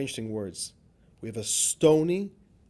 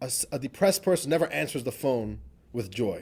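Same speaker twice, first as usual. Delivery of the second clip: ordinary talk, nothing marked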